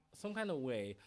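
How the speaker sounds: ordinary delivery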